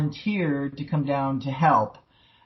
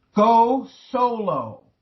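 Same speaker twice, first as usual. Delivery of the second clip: put-on thundering voice, higher; 8 semitones higher, 4 dB louder than usual. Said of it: "always get this thundery voice comes in".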